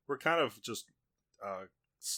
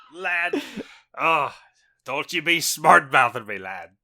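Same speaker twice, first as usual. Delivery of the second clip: put-on pirate voice, louder; 5 semitones higher, 12 dB louder than usual. Opening a horror podcast episode, a host jokes around; Willem Dafoe pirate voice. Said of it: "Am I Willem Dafoe or a pirate?".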